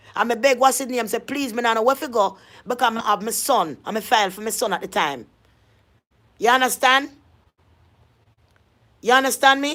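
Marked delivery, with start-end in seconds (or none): none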